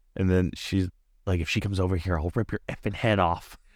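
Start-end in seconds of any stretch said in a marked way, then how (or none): 1.4-3.6 put-on threatening voice. Retelling a scene from the movie, quoting Megan: imitating Megan's threatening voice. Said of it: "she was so threatening".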